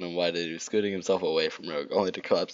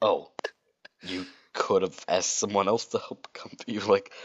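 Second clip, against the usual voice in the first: usual speaking voice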